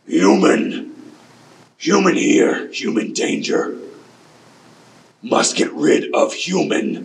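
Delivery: frightened, high, slow, drawn-out crocodile creature voice. Narrator voices a crocodile calling down a waterfall, crocodile yelling. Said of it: "You hear this crocodile yelling down this waterfall".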